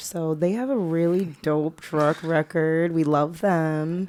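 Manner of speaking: slow, insincere, sarcastic tone. Co-host commenting on a company after describing its oil spill, sarcastic. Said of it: "say it with sarcasm".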